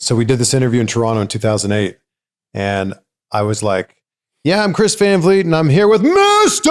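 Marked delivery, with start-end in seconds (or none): 4.4-6.7 imitated, shouted yell. Retelling his own interview intro, imitating his own yell. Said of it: "And I, like, yelled it".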